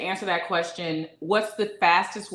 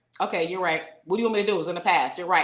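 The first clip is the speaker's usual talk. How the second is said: put-on condescending, mock condescending tone. Imitating a partner brushing off her complaint: imitating a condescending tone. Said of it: "He'll do that to be condescending".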